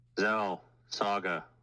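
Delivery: calling out loudly. A tabletop character calls to two others across the room, raised voice. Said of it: "That's his raised voice".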